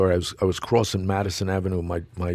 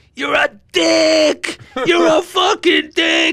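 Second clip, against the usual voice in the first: top-of-the-lungs yell, very high, loud, shrill, full-throated; 9 dB louder than usual. Retelling a stranger in the street insulting him: imitating yelling at the top of lungs. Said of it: "at the top of his lungs".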